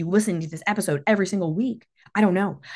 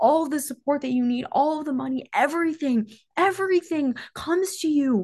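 moved, heartfelt, emotional, pitched-up outpouring; 8 semitones higher than usual. Speaking about feeling supported in a decision, getting emotional. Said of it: "I'm getting emotional".

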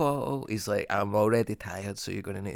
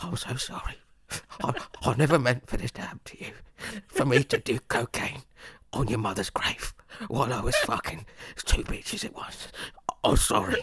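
mocking, teasing put-on English accent; 3 semitones higher than usual. Mocking the other speaker's apologies: imitating the other speaker's english voice. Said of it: "That's what you sound like".

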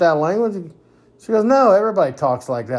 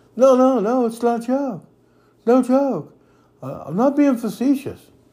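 high, mocking parody put-on voice; 8 semitones higher than usual. Mocking how the leader insists he is not being facetious: imitating the current leader. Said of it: "like he's".

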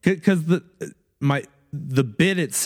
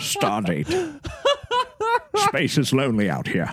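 theatrical actor voice, pitch swinging widely; 3 semitones higher than usual. Listing impressions he could do: Patrick Stewart voice. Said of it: "Patrick Stewart".

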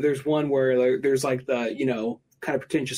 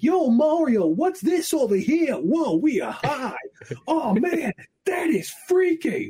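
very high, over-the-top fake Brooklyn accent; 12 semitones higher than usual. Retelling a guy's lines from a video, in the most fake Brooklyn accent. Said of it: "he's putting on the most fake like Brooklyn accent".

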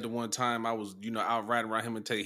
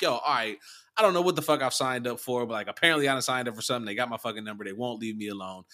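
ordinary talk, nothing marked

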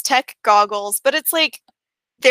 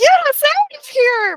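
squeaky, very high-pitched, slow, drawn-out voice; 4 dB louder than usual. Retelling a funny scene, quoting Wrecker's line in a really high, squeaky voice. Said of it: "it's like really high pitched and squeaky".

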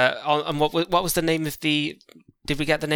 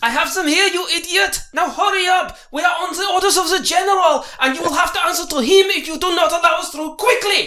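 furious, shrill, very high, bad fake German accent; 6 dB louder than usual. Playing a soldier demanding entry at a gate, angry bad german accent. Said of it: "The worse the accent, the better the German".

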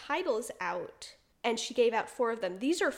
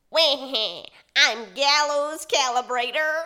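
nasal cartoon villain voice, louder; 3 semitones higher, 9 dB louder than usual. Showing a co-host a twisted version of a character voice, Waluigi voice. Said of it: "this is what their voice sounds like".

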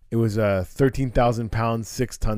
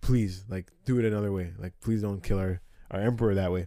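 mock desperate, pleading tone; 2 semitones lower, 5 dB quieter than usual. Retelling how the Incans begged for their emperor, acting out begging. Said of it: "they were like begging".

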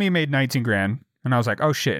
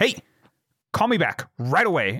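mock alarmed, panicked voice; 3 semitones higher than usual. Retelling a voicemail from their father, imitating father's panicked voice. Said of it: "I can tell when my father's in a panicked voice".

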